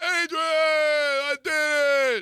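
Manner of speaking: very high, stretched shout holding the "I". Retelling the fighter shouting after going the distance with the champ, retelling Rocky's yell. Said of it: "He's yelling".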